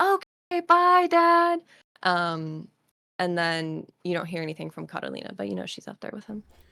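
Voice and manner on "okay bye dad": top-of-the-lungs scream, very high and loud. Voicing a kid answering a departing father: screaming at the top of his lungs. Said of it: "screaming at the top of h-, his lungs".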